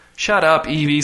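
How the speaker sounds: ordinary delivery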